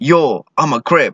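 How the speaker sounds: high, drawn-out calling voice. Retelling a man who yells from across the room: imitating someone yelling. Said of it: "he yells".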